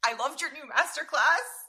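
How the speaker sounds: high, loud voice, cracking and breaking. Retelling meeting a famous chef, nervous: imitating own breaking voice. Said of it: "in, like, that breaking voice".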